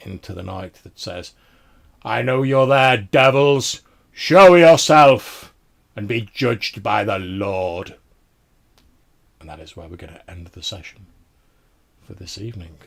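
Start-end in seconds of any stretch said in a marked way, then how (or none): 2.0-8.0 booming, loud, stern, commanding voice ringing out. A game master voices an unseen figure calling out to the players, loud, stern, commanding voice. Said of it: "a loud, stern and commanding voice".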